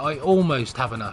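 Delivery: stress on "almost".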